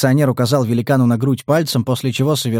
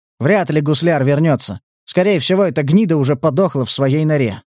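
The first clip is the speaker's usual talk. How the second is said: plain reading voice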